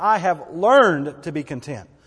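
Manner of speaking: "learned" leaned on, slowly. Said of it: "underline that word learned".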